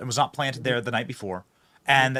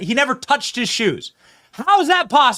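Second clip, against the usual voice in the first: very high, very loud, full-on yelling; 12 semitones higher, 7 dB louder than usual. Discussing a suspect's shoes with no DNA on them, yelling. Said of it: "I'm gonna stop yelling".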